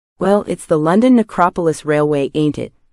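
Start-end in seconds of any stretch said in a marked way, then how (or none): none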